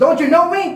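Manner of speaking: acted very angry, high-pitched. Translating what a driver said in Tagalog, in a mock very angry voice. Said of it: "I will just translate it in English in a, in a very angry voice".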